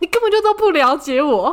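abrupt, sudden high yelling outburst. Recalling a moment in the car with a parent: retelling a sudden yell. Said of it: "我就突然大吼说".

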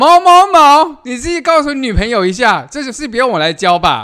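loud, high shout. Recalling answering a senior's girlfriend's question by calling out his name, retelling a shout. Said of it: "我就大叫出学长的名字".

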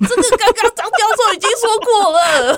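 very high, stretched-out, drawn-out shouting. Retelling how she shouted at the tv during the q&a part: retelling yelling at the tv. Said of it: "在电视前面大吼".

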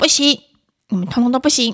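loud, hot-tempered, irritable voice. Reading an article's examples aloud, imitating an irritable mother. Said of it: "暴躁的妈妈会说".

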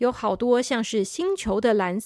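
ordinary delivery

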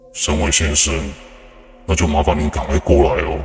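low, drawn-out voice. Retelling a recorded call to Mr. Shen Wei, the narrator voices the caller: low, as if from underground. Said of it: "但现在听到的声音，却低沉的，像是从地底传来的一样缠绕的声音。".

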